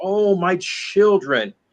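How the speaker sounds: anguished, pained, wailing cry. Telling of a mysterious woman seen wandering at night, imitating her pained shout. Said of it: "shouting in a voice of pain".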